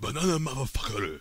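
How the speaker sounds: put-on Japanese accent. Imagining a dubbed version, saying the line in a hilariously fake japanese accent. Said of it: "hilariously fake pseudo-Japanese English accent".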